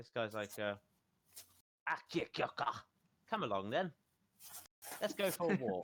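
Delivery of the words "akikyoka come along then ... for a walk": high, really polite, genteel orc voice. Game master voicing the orc NPC on its turn, in a really polite voice. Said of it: "Really polite voice".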